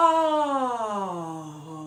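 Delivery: deepest, drawn-out "oh" at bottom of range. Showing the bottom of one's range: lowest pitch. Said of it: "I get down to".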